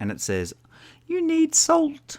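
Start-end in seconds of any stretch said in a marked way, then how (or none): 1.1-2.2 tiny, very high-pitched little lady voice. Voicing the little voice in his head: little lady's voice. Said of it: "It's like a little lady's voice".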